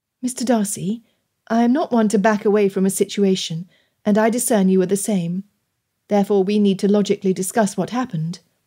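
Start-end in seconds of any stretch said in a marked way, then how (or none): none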